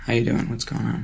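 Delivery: curt, standoffish, terse, deep voice with falling pitch. Showing how they would greet someone when less accessible, terse, deeper greeting. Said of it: "my voice could get deeper and I could let it fall... I would just get very terse".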